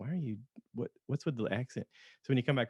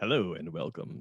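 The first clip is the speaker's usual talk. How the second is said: lower-pitched broadcaster announcer voice; 4 semitones lower than usual. Explaining the voice they use now, showing it to the other speaker: broadcaster voice. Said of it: "It's broadcaster voice is what it is".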